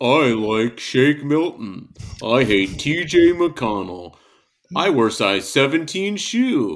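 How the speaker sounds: very slow, deliberate, drawn-out plain delivery. Doing an impression of another speaker, Mike Benner, imitating Mike Benner. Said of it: "Whenever [name] does an impression of me".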